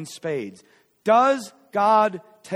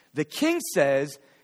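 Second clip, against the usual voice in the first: plain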